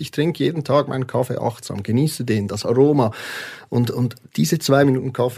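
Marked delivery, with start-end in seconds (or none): none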